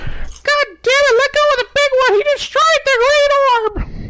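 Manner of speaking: very high, high-pitched yelled-out scream. Narrator voices Perfius screaming out to Garen: Perfius screaming. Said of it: "he'll scream out to Garen".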